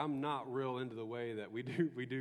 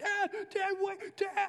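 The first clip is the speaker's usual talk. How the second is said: mock child scream, much higher, louder, slower; 6 dB louder than usual. Retelling Jack chasing him through the house, imitating Jack screaming. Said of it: "he starts screaming".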